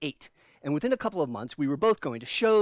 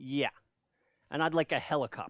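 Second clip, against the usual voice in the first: mock withering, devastating sarcasm in a thirteen-year-old voice; 6 dB quieter than usual. Retelling a thirteen-year-old's reply to a pony request: imitating Michael's devastating sarcasm. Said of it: "with the devastating sarcasm of a thirteen-year-old".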